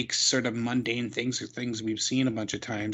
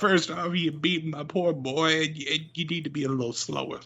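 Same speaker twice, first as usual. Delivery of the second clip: put-on mumbly southern voice, higher; 6 semitones higher than usual. Imagining the wrestling manager's promo in a silly voice: Bobby Boucher voice. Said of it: "You sound like Bobby Boucher".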